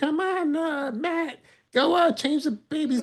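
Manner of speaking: mock yelling, very high-pitched. Act out an imagined moment of Jasmine yelling at Matt at home, imitating Jasmine yelling. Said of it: "Imagine Jasmine's like yelling at you".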